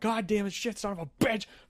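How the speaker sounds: losing-it angry cursing. Retelling discovering a wrong food order: imitating own angry cursing. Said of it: "I start losing my shit".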